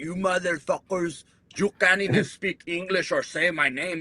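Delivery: put-on heavy, thick Cuban Spanish accent. Retelling what a Cuban refugee named Casa used to say, in Casa's thick Cuban accent. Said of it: "he had that real thick Cuban accent. He'd be like".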